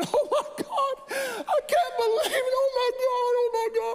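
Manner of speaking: put-on very high, drawn-out, tearful sobbing scream. Retelling how a woman cried and screamed when he came: imitating crying and screaming. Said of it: "She's crying and she's screaming".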